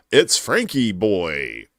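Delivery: put-on swooping pronunciation with Boy drawn out long.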